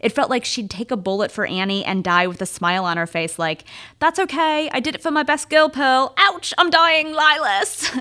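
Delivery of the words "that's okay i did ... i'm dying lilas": put-on British accent, pitched up higher. Imagining [name] dying for Annie with a smile: [name]'s British accent. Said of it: "that was actually like a really good British accent".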